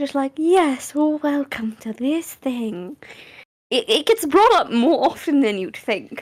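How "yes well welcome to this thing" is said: slow, eerie, creepy corporate-speak voice. Imitating a voice a content creator loves to use: creepy corporate voice. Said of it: "the corporate creepy voice".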